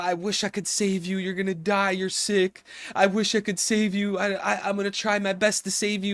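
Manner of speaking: acted, weeping, tearful, stumbling crying speech. Retelling a sad scene where Corazon leans over Law: imitating Corazon crying. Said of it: "And he's crying".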